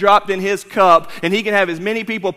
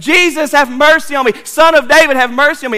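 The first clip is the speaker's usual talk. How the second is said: mock screaming, pleading in tone; 6 semitones higher, 5 dB louder than usual. Speaker retells a man in a parade crowd calling to jesus, retelling a scream. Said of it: "but he keeps screaming".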